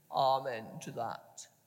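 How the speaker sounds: very low, deep, tomb-like voice. Reading the story aloud, the narrator voices Mr. Flushpool's reply: Mr. Flushpool's deep tomb-like voice. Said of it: "says in a deep tomb-like voice".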